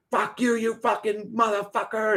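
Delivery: mock angry yelling, high and furious. Retelling how someone snapped on a live stream: imitating Santos yelling. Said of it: "he started yelling at the dude".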